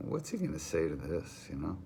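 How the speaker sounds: usual speaking voice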